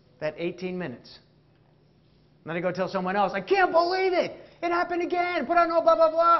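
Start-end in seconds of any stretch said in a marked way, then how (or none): 3.4-6.4 shrill, loud, exasperated, frustrated yelling rant. Describing a repeated reaction, the speaker acts out telling someone else, retelling own yelling. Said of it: "Yelling and screaming".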